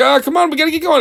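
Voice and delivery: put-on very high, pressing, hurried urgent voice. Retelling a movie scene where a character urges another to leave: imitating growing urgency. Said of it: "he's getting more urgent with it".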